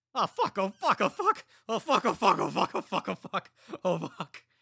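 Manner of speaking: frantic, panicked, very high and loud shrill outburst. Narrator reads a soldier just shot in the neck, just-shot soldier swearing. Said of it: "despite knowing clearly that [name] was a sociopath. / The bullet had taken [name] by surprise just a moment before, piercing his jugular and knocking him back on his ass. / [name] kept repeating the".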